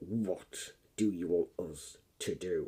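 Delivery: slow, angry, put-on voice.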